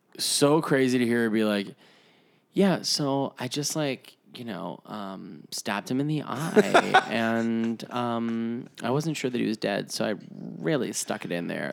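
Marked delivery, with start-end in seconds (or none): 2.6-11.7 calm, soft, casual, unbothered, matter-of-fact. Imitating a woman calmly describing a stabbing: imitating a calm woman describing a killing. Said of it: "that's a great impression".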